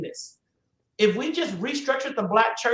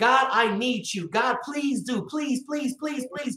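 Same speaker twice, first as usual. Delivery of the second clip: put-on repeated begging, pleading tone. Acting out prayers to God: imitating begging and pleading. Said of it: "Begging and pleading with God".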